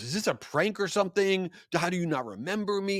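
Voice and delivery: put-on, high, furious, pissed-off outburst. Retelling how a customer snapped at a barista: imitating a furious customer. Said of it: "And he was so pissed".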